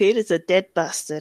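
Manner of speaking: low, northern-sounding, northern "a" in "bastard". Doing an impression of Bear, a friend on the stream: imitating Bear. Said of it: "that was my bear impression".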